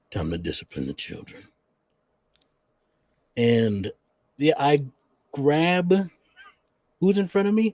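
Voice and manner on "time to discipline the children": deep, low, rumbling dragon-beast growl. Narrating a scene, the speaker voices a transformed dragon-like creature; deep growl. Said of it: "he speaks in a deep growl".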